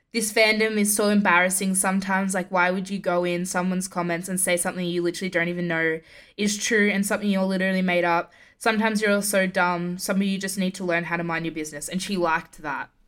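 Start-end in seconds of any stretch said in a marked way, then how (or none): none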